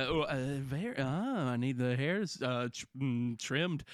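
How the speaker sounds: stumbling, stop-start, overly polite delivery. Acting out asking for a trim, in a Jeff Goldblum voice. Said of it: "You are Jeff Goldblum".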